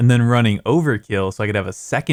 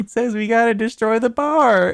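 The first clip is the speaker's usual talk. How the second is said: put-on very high little kid voice; 13 semitones higher than usual. Retelling a game moment when a voice answers Joe, disembodied little kid's voice. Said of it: "this disembodied little kid's voice".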